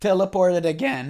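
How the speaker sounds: voice cracking. Talking through a game update, voice cracking. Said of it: "that was a generational voice crack".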